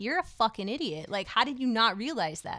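acted, mock-demeaning, berating put-down tone. Speaker replays the words they had said about him, mock-demeaning berating. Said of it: "was very demeaning".

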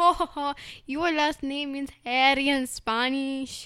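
very loud, very slow, drawn-out, booming teasing laugh. Retelling how the Spanish teacher laughed at a last name: imitating the Spanish teacher. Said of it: "That is not how he sounded".

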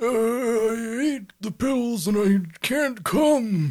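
put-on elderly voice. Two people improvise a tech support call; the caller speaks in an old man voice. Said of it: "Why don't you be the old man?".

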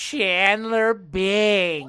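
loud belted call, one word stretched long. Trying Janice's catchphrase during a quiz: Janice impression. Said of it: "sound more like Fran Drescher".

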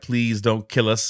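sobbing, tearful, begging voice. Retelling a story, voicing the girl's mother who grabs her: imitating a mother crying. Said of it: "and starts crying".

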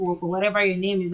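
ordinary delivery

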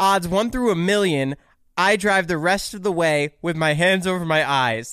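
plain

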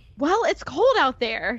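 put-on defensive tone. Narrating a wife's reply after her husband clicks his tongue impatiently, defensive. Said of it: "she said defensively".

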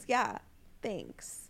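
awkwardly. Reading a scene aloud, he answers her 'Happy 17th' very awkwardly. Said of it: "And he very awkwardly says".

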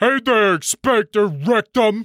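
menacing bully growl. Slugs O'Toole, the school bully, calls out from behind: menacing growl. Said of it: "Growls a menacing voice from behind".

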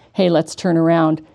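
ordinary delivery

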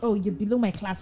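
normal talking voice

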